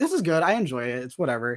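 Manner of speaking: ordinary talk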